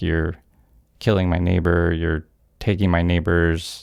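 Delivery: ordinary talk, nothing marked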